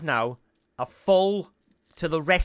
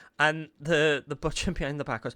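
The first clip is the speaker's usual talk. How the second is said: ordinary delivery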